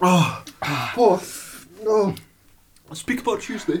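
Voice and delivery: crying voice. Eating a very hot chili with others: crying from chili heat. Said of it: "I'm actually crying".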